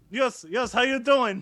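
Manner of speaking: put-on flat, drawn-out Russian accent. Asked for a Putin impression in a conversation: Vladimir Putin impression. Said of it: "Vladimir Putin, please".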